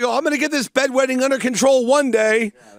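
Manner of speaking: play-acted, bold, mild half-yelled declaration. Retelling what the speaker yells to a therapist: very loud voice. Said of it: "in a very loud voice I go".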